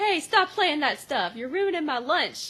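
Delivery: put-on child voice, called out high from afar. Retelling a scene where a kid yells from the background: imitating a kid yelling. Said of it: "yells from the background".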